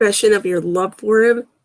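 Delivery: plain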